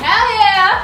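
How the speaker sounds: high, loud, excited cheer.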